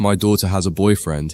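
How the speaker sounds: ordinary delivery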